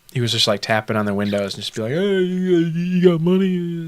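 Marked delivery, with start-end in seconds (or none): 2.0-3.9 very slow, sneering, derisive, high-pitched voice. Retelling a man tapping on car windows in a drive-through line, mocking a homeless man's voice. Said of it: "I sound like I'm mocking him".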